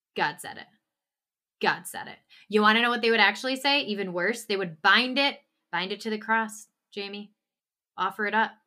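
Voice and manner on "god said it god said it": mock indifferent tone, lower and quieter.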